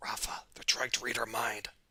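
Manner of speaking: secretive, hushed, very quiet whisper. Narrating a game scene, voicing a character whose eyes widen: whispering. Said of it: "and he whispers".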